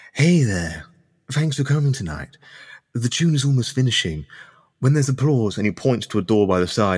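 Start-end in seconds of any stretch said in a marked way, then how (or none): 0.2-5.6 discreet, confiding aside with pitch raised. Voicing Louis thanking the four players for coming: hushed tone. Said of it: "with, like, a hushed tone".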